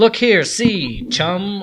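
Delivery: put-on very loud, slow old-time radio announcer voice. Showing how the old comic's lines sounded when read: old radio announcer voice. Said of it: "your old radio voice or your announcer voice".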